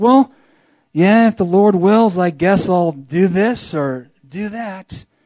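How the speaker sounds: heavy, downcast, somber voice. A preacher illustrates the wrong way to say if the Lord wills: somber voice. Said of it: "Not in some somber voice".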